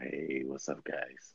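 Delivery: deep, very low, hushed, barely audible voice. Speaker mimics how a man used to greet everyone on coming in, imitating his greeting. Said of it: "You just super sounded like that fool".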